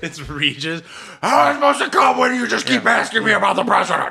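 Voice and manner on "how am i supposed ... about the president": very high, ragged, raspy, furious angry screaming. Acting out a frustrated game show contestant yelling at the host: mock screaming at the host. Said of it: "You're just screaming at him".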